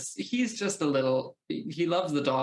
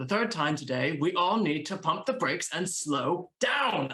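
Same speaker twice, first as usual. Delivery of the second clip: all worked up, grr-angry voice; 3 semitones higher than usual. Describing a game character spinning on a heel, the player speaks the line angrily. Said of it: "get all angry".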